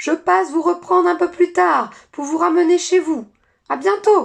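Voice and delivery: very high, very loud, raspy hoarse shout. Narrator reads a winged creature calling to its passengers as it leaves: hoarse shouting voice. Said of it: "s'éloigna en criant de sa voix rauque".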